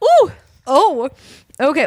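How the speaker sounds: very high, squeaky, awkward "ooh okay".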